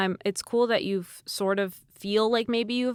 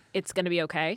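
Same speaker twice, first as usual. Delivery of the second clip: ordinary delivery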